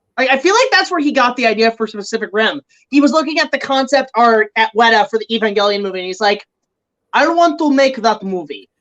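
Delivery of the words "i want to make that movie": put-on heavily laid-on Russian accent. Retelling how Del Toro reacted to Evangelion concept art, in a heavy Russian accent. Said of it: "I make him sound like a Rush, like fucking Ivan Drago".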